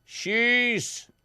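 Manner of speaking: very high, loud, barked shouting. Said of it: "she shouted".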